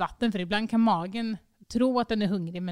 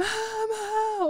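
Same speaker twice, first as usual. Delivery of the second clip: put-on screaming child voice, higher; 14 semitones higher than usual. Retelling how a child screams at bedtime: imitating a screaming child. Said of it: "hon skriker så att det".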